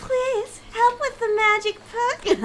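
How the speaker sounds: put-on very high-pitched, pleading girl voice.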